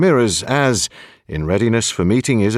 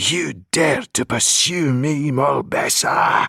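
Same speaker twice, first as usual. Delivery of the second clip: sizzling, hissing, snakelike voice; 4 semitones higher than usual. Reading a novel aloud, voice a woman confronting her pursuer in a hissing snake-like voice. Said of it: "she hissed in his head, in a voice like a frying pan full of snakes".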